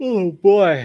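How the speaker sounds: yawning while talking. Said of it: "I'm yawning".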